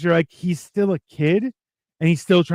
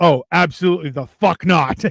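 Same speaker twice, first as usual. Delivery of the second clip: put-on enraged villain voice. Speaker recounting a comic plot, imitating an enraged Doc Ock. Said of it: "he was so enraged".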